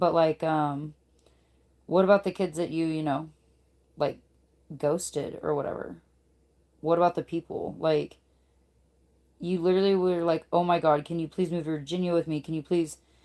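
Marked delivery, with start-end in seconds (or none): 10.5-13.0 put-on begging, pleading tone. Retelling how someone begged the speaker to move: imitating someone begging.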